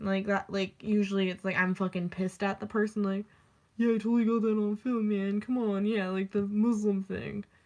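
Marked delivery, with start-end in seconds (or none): 3.8-7.4 lowered, dropped put-on bro-style guy voice. Imitating a guy teasing about filming: imitating a guy in a lowered voice. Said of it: "I have to drop my voice".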